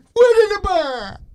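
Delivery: shrill, loud, drawn-out high cry. Showing a co-host an impression of the best line from Seven: Brad Pitt in Seven impression. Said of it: "my impression of the best line from Seven".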